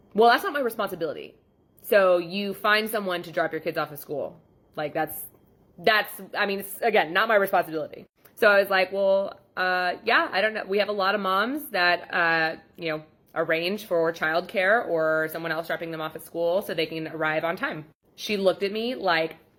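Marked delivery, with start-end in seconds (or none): none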